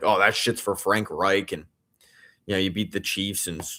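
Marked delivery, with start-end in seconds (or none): none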